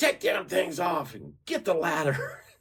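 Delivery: put-on angry madman voice. Retelling what a mad man said after the speaker climbed down: imitating an angry man. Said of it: "He's mad".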